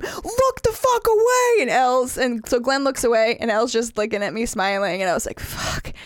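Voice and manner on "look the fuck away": acted scream, much higher and slower. Recounting shouting at three people staring at him, retelling a scream. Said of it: "I'm screaming at them".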